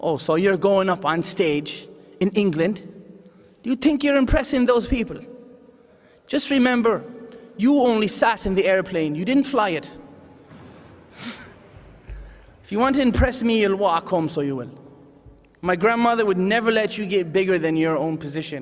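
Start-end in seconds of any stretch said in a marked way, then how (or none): 0.0-14.7 put-on stern, no-nonsense, tough old woman Irish brogue. Recalling the grandmother's voice in one's head, imitating an Irish accent. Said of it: "Born and raised in Canada with an Irish accent".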